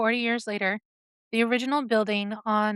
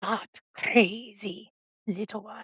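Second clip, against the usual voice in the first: slow, guttural, stretched-out, crazed-sounding growl. Narrator voices the stove voice's reply to the man: Zaragoza goblin's slow guttural voice. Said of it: "the voice replied in a slow, guttural tone".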